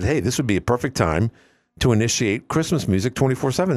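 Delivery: plain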